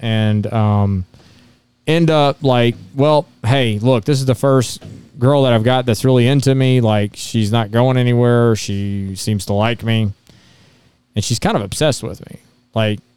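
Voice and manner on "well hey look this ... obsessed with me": usual speaking voice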